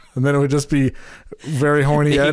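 usual speaking voice

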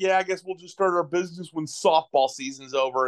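mock sarcastic, snide, needling tone. Retelling an upline's remark at an event, mock-sarcastic retelling. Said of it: "he made a sarcastic comment".

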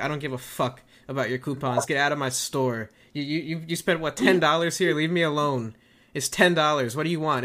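ordinary delivery

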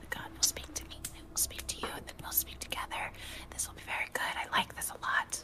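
soft, hushed, gentle whisper. Playing a character who picks up a cat, whispering quietly to it. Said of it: "whispers to it quietly".

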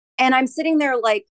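ordinary talk

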